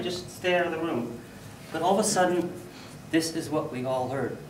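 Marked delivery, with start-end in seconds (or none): none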